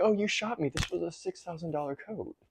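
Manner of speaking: very high, sarcastic delivery. Imitating Lucifer from a show he watched: sarcastic Lucifer voice. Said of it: "He's like".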